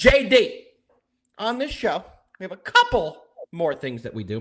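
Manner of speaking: voice cracking. A show host addressing a co-host, voice cracking. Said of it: "My voice cracked tremendously there".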